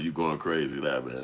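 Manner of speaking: ordinary talk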